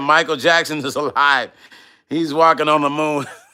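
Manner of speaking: ordinary delivery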